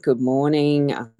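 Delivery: ordinary talk, nothing marked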